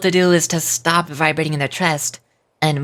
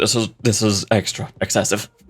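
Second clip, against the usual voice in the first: overly deep, strained, pushed-down forced voice; 6 semitones lower than usual. Showing a voice that strains to keep up: excessively deep forced voice. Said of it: "something a little more like this".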